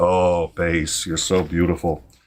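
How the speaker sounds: low, slow, seductive drawl. Mocking Trump for sounding like he is propositioning his base: mock propositioning Trump voice. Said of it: "propositioning his base".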